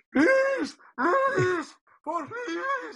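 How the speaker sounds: very high, unhinged, frantic, desperate shouting. Showing how a man you want sounds when he's yelling, do a yelling Andreas Michael impression. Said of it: "when he's yelling".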